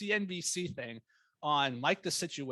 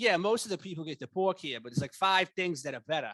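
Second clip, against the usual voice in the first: put-on heavy, thick Boston accent, barely hidden; 2 semitones higher, 4 dB louder than usual. Retelling what a waiter at a rehearsal dinner said, in a thick Boston accent. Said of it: "It was like really thick".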